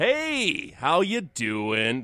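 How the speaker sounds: stretched out, slow, high-pitched and loud. Opening a podcast episode by pretending to be Ben Kissel. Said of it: "That's me pretending to be Ben Kissel".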